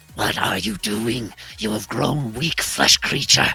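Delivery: swooping, hissing, spat-out creature voice. Speaking as a figure scolding Lux for missed shots, low hissing voice. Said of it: "like low hissing voice spitting back at you".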